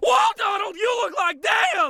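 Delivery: very high, very loud top-of-lungs scream. Describing a favorite cartoon scene to another speaker, retelling Bill Farmer's scream. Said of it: "screaming at the top of his lungs".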